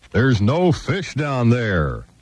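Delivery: slow, drawn-out voice as if from overhead. Telling a joke, voicing a voice from above: booming voice from above. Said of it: "this voice kind of booming above him".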